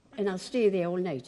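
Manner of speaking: ordinary talk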